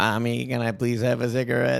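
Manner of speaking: robotic speech synthesizer voice. Retelling how a three-year-old sounded, doing a Stephen Hawking voice. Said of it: "sounds just like Stephen Hawking".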